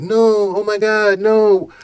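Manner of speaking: put-on high, very slow, drawn-out girl voice. Retelling a comedian's stage joke about a woman: imitating Kevin Hart's female character. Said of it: "this joke about, um, the female, like".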